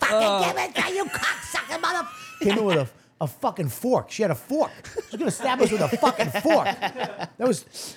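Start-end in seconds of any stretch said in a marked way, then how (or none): 0.0-2.1 very high-pitched woman's voice. Retelling how a friend's mother demanded her drugs back: imitating a crack addict woman. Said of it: "Just a little crack addict woman".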